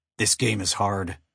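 ordinary delivery, nothing marked

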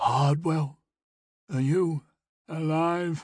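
weak, feeble gurgling voice. Reading a story, voice Briston calling out to the hunter in a weak, gurgling voice. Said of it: "a weak, gurgling voice called out".

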